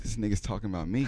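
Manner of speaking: normal talking voice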